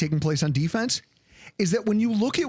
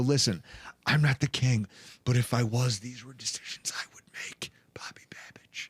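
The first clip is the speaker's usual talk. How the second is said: put-on whisper, lower and quieter; 5 semitones lower, 5 dB quieter than usual. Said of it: "just to whisper in his ear and go".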